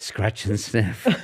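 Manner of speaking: exaggerated soft, breathy put-on hush. Retelling a line said one early sunday morning, in a put-on breathy voice. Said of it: "What a breathy voice".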